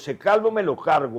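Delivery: angry voice.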